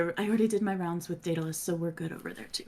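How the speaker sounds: soft, hushed aside. A player's character, walking away from the queen, quietly says a parting remark. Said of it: "I'm also gonna sort of like quietly say".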